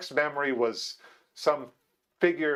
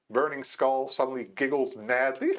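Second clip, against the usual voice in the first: normal talking voice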